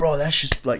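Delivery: high, soft, gushing hyped festival bro voice.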